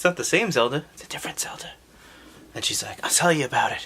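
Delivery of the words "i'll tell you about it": put-on whisper. Retelling a story, voicing a sleeping princess: acting out a whisper. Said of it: "just stop whispering".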